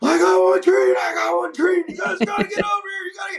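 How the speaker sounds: shrill, very high screaming yell. Retelling a call over the radio to the hunter: retelling screaming on the radio. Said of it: "I'm just screaming on the radio".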